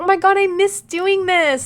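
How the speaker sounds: high, loud, delighted gushing.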